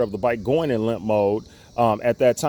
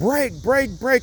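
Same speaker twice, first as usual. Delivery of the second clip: mock shrill, very high, urgent repeated yelling; 12 semitones higher than usual. Retelling an incident, the speaker re-enacts yelling brake to her. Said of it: "I'm yelling brake".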